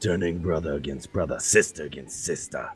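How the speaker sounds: grand, deep, epic trailer narrator voice. Joking with friends about Preston's legend, continuing the tale: Skyrim expansion-pack narrator voice. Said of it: "You sound like a fucking Skyrim expansion pack".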